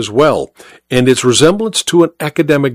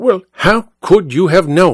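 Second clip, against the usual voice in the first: pressing, insistent, demanding tone; 3 semitones higher than usual. Confronting a sneering old soldier, he demands an answer. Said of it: "Holmes demanded".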